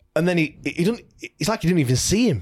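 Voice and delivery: ordinary talk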